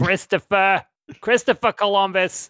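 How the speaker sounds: very high, angry, scolding yell. Imitating a mom calling her son's full name when she's mad, imitating an angry mom yelling. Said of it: "Like when she's mad".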